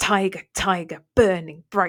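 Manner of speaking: hard t and b plosives in tiger, burning bright.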